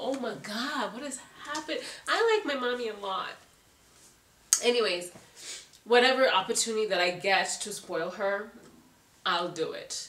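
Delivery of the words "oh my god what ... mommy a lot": teary, welling-up words in a tearful, pitched-up voice. Speaker talking about spoiling their mommy, tearing up. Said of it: "I am tearing up".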